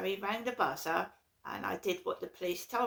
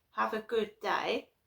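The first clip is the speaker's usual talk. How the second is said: imitated giggly voice; 2 semitones higher than usual. Retelling a phone call from mum: imitating a giggly voice. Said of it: "a giggly voice in her phone call".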